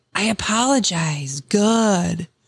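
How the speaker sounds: laid-back surfer voice, drawn-out "good". Mocking an insincere apology: imitating a surfer dude apology. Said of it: "a surfer dude".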